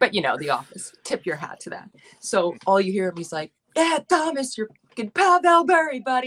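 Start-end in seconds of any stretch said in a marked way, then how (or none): 3.8-6.3 put-on speaking with a Long Island accent. Acting out an older guy screaming a compliment at you, Prison Mike's thick Long Island accent. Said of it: "Like in a thick Long Island accent".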